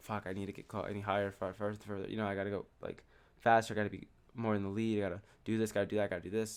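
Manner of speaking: put-on stressed-out, anxious voice. Retelling own thoughts while running a race: retelling own stressed-out thoughts. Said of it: "stressed out".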